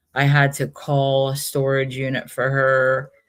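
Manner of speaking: normal talking voice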